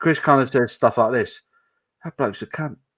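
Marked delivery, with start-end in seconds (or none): 2.0-2.8 really quiet, hushed, under the breath. Imitating a tipsy friend's quiet abuse: imitating Chris saying it quietly. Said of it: "he'll say it really quietly".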